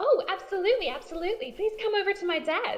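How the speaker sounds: bubbly, cheerful woman's voice. Voicing a mayor who answers the door: very cheerful woman's voice. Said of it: "She seems very, very cheerful".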